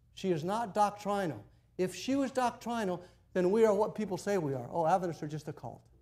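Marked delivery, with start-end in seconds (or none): none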